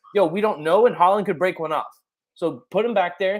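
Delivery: plain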